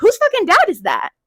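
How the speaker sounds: play-acted loud calling out. Retelling yelling a question to girls at a party: retelling a yell. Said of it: "I'm yelling to all these girls".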